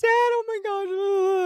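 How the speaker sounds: acted, very high, slow hysterical sobbing. Retelling her phone call to her dad, imitating her own hysterical crying. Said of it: "I'm hysterical and I'm crying and I'm like".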